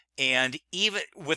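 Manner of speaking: plain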